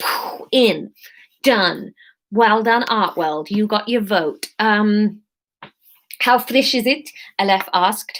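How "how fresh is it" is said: put-on South African accent, higher pitch. Reading a story aloud, voicing the character Aleph: South African accent. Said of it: "we can do Aleph as South African".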